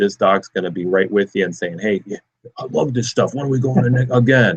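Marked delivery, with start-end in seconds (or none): 1.8-4.6 put-on voice speaking as a dog. Describing a dog joining its owner on light runs, speaking as the dog in a dog voice. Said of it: "The dog voice is the best".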